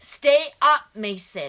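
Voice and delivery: booming shout, very loud and barking. Retelling a moment when others yelled at her, imitating someone shouting. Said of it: "why are you yelling at me?".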